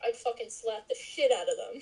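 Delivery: ordinary talk, nothing marked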